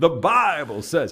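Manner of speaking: booming North Carolina preacher style. Quoting a preacher's favourite phrase: Billy's rich North Carolina accent. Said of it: "he has it in that rich North Carolina accent".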